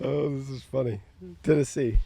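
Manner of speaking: talking through laughter. Reading out a team list to the others, laughing while talking. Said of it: "Why are you laughing so much?".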